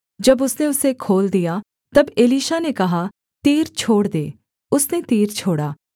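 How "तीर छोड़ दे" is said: ordinary talk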